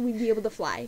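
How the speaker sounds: usual speaking voice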